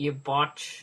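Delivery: terrible fake New Zealand accent. Joking about how it's said in New Zealand, in a bad New Zealand accent. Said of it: "I can't do the accent".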